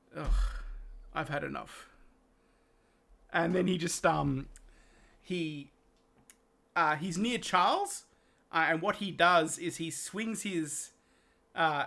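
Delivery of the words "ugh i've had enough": heavy, deep, weighty, subdued, unfamiliar-sounding voice. Narrating a scene, the speaker voices a chuckling character in a weighty, deep voice. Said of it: "with this this really sort of weighty, um, deep voice".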